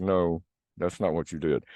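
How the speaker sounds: ordinary delivery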